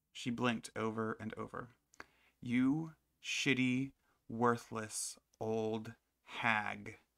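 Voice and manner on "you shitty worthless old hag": loud, very slow enunciation, every syllable spelled out. After asking about her mother, the narrator addresses the woman directly: slow, careful enunciation. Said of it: "I enunciated every syllable slowly and carefully".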